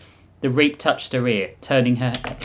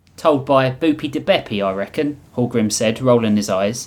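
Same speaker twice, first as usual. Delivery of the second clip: ordinary delivery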